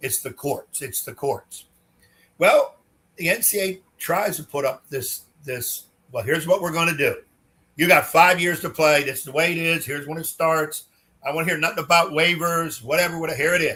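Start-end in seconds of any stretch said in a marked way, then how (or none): 6.2-13.8 tough, bossy big-man voice. Imitating the NCAA laying down its eligibility rules: imitating a big man voice. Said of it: "use the big man voice".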